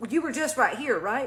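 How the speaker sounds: normal talking voice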